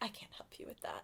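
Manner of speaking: soft, deadpan whisper, sounding completely indifferent. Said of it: "that kind of deadpan delivery".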